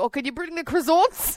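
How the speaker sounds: put-on slight Irish accent with a gentle lilt. Speaker retelling a co-worker's recurring request, in slight Irish accent. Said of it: "what accent was that? It's a bit Irish".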